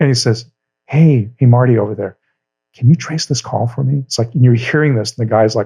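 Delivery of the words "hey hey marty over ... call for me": muffled, aside-like voice. Retelling a comedian's prank call as police: imitating a muffled aside. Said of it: "he does this muffled thing like he's talking to somebody else".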